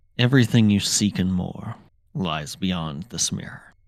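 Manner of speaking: low-key, even, calm, understated delivery. Game master voicing a character at the mirror, speaking quietly. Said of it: "And he says quietly".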